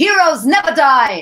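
loud, high yelling. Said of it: "in Mercy's voice".

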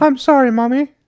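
put-on very high, loud little-boy cry, squealed. Faking a second person at home, answer the mother voice as Norman as a little boy. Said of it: "He's a little boy in that situation".

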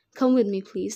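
plain reading voice

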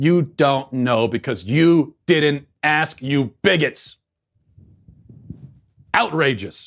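fired-up, heated, righteously indignant voice. Speaker rants about people assuming what a penguin wants, heated outrage. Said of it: "Sorry, I'm a little heated".

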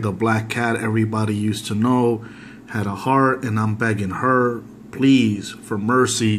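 ordinary talk

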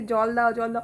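plain

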